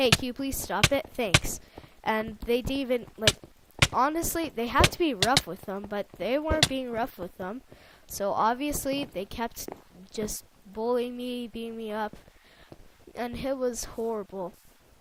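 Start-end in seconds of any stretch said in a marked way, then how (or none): 0.0-1.6 polite, courteous, well-mannered tone. Retelling how they only mildly asked the bullies to stop; mock-polite voice. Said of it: "in a polite voice".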